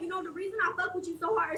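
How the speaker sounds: plain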